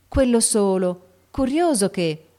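amiable, surprised exclamation. Sally, not noticing Meg's effort, exclaims to Meg with amiable surprise. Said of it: "esclamò con amabile sorpresa".

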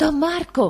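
high, terrified stammer. Baldassarre answers don marco's shouting with a terrified stammer. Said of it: "balbettò Baldassarre atterrito".

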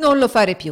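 dismayed high pleading. The figure begs the laughing baron, pleading in dismay. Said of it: "supplicò la figura con un'aria di sgomento".

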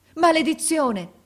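shrill, very high shouted cry. An officer runs toward a boy who has fallen: shouted curse. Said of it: "gridò l'ufficiale accorrendo".

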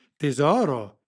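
loud, cheery, jovial exclamation. Lara's mother appears on the screen and greets her with a jovial exclamation. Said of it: "esclamò gioviale la matrona".

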